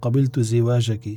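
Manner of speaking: ordinary delivery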